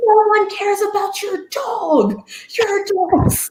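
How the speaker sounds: mock very high, slow, drawn-out yell. Retelling yelling at another player to break his concentration: retelling a yell. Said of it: "I'm, like, yelling at him".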